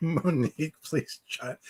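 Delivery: talking through laughter. Trying to hand the floor to monique on a panel: laughing while talking. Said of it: "I'm still laughing at the John thing".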